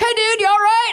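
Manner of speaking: high-pitched, dude-style yell. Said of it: "yelling at me, like, Denver dude".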